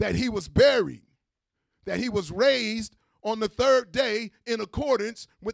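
loud, screaming preacher-style shout.

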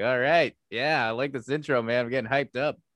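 plain

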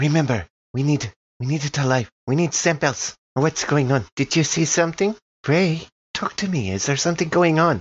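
stage whisper that is too loud. Voicing a doctor asking ray what is going on: too-loud stage whisper. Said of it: "too loudly, in a stage whisper".

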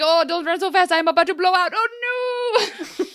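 very high fake-sounding French accent. Voicing the candlestick character fleeing with Belle: bad French accent. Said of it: "I apologize to everyone here with a French accent".

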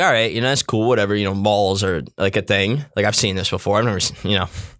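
normal talking voice

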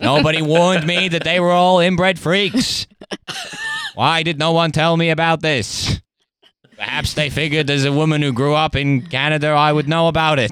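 high-pitched voice like a vintage film orator. Joking about Harry voicing Meghan: JFK film voice as Meghan Markle. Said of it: "doing the J F K voice as an impression of Meghan".

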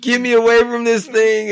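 put-on very high, loud, tearful sobbing. Retelling being scared of a talking puppet as a child: imitating own past crying. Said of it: "just started crying".

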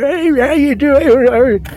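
put-on shaky, quavering, very high, slow old man voice. Describing how they get the old man voice: shaky old man voice. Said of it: "they get the old man voice, like".

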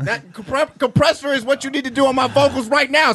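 loud, high-pitched shout. Complaining to the sound guy about a compressor: yelling. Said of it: "I'm fucking yelling into this chicken".

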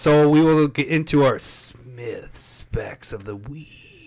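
drawn-out, slowed-down speech. Announcing the next segment to a co-host, slowed-down delivery. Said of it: "Did we slow that down on purpose?".

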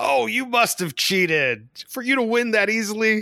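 very high-pitched, sing-song, swooping, mocking sarcasm. Retelling what is said after losing a game: imitating own sarcastic taunt. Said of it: "very sarcastically, I'll say".

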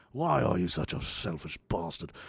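breathy, whispered put-on British accent. Asking a mocking question of the listener: put-on British accent. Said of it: "I have a British accent going right now".

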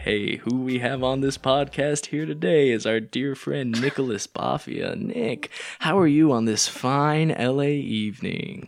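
nice and sultry. A podcast host welcomes a friend as today's guest, nice and sultry. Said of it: "Sticking with this theme of being nice and sultry".

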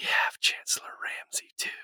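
hushed, secretive, very quiet whisper. Player speaking in character so the rest of the party won't hear, very quiet whisper. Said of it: "I'll whisper like really quiet".

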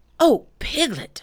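eager, excited calling voice. Coming up to a friend who stands thinking, he calls out: excited. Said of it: "said Pooh excitedly".

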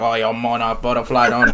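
imitated Cajun accent. Quoting what people kept saying, in a Cajun accent. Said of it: "saying this in Cajun accents".

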